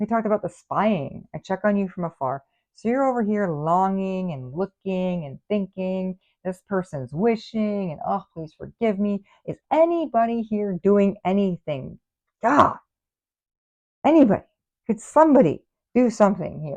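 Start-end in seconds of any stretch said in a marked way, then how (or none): 9.5-16.8 yelling out loudly. Speaker calls out to anyone around, yelling. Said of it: "Sorry, I don't mean to yell".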